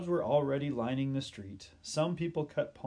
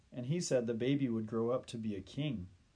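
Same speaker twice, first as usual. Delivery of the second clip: usual speaking voice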